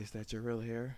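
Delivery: sultry, sensual, seductive voice. Retelling a coworker leaning in at a team meeting: imitating a sensual voice. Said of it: "she gets her sensual voice".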